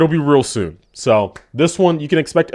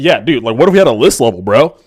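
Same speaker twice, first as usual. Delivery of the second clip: mock exaggerated bro voice, louder; 4 dB louder than usual. Retelling a friend's pitch for a list level: imitating a friend's exaggerated bro voice. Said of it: "why are you fucking talking like that".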